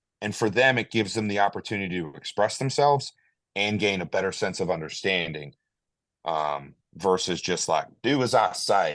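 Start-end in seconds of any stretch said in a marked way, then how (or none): 8.0-9.0 very slow, fake Southern American drawl. Contrasting a bossy instructor order with listening: put-on Southern accent. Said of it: "I did it with a Southern accent".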